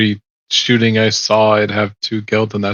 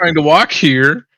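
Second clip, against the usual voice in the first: put-on high-pitched, drunken yelling; 6 semitones higher than usual. Speaker retells walking up to a barricade, retelling a drunken shout. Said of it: "I am drunkenly shouting".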